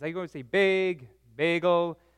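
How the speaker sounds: Minnesotan accent. Speaker back from Minnesota, slipping into the Minnesotan accent. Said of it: "the wonderful Minnesotan accent. I'm sorry, it kind of happens".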